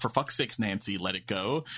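normal talking voice

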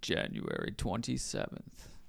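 imitated very deep voice. Imitating another speaker's really deep voice after being told to do it. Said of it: "I'm trying to imitate it".

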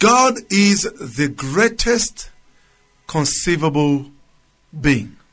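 slow, weighty, spaced-out pronouncement.

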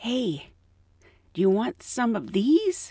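put-on whisper. Retelling how a store worker called out at checkout: imitating someone whispering. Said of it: "she kinda whispers".

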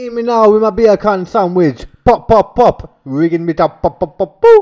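very loud, high, put-on Jamaican accent. Taking a turn in an accent contest: jamaican accent.

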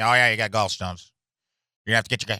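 put-on tiny, fly-like voice. Quoting the man who phoned back with ultrasound results: talking like a fly. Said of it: "He talks like a fly".

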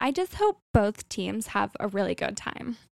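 little put-on, swooping sing-song valley girl voice. Teasing sports fans at a restaurant, in a little Valley Girl voice. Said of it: "put on my little Valley Girl voice".

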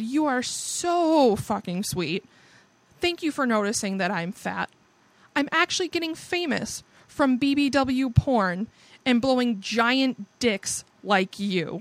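mock extremely sarcastic, dripping and biting. Retelling own reply to someone who called them fat: retelling an extremely sarcastic reply. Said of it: "I was extremely sarcastic and said".

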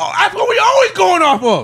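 heated, very high, loud, high-pitched yelling. Arguing about quarterback rankings with the others, yelling. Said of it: "Why are you yelling?".

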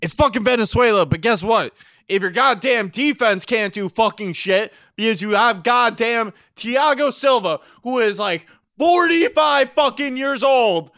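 aggressive ranting. Arguing with another speaker about a team's defense: aggressive ranting. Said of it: "Why are you being so aggressive?".

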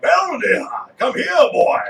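put-on old Southern man voice. Repeating a cartoon character's catchphrase to a dog: old Southern guy voice. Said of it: "the old Southern guy".

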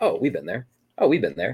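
usual speaking voice

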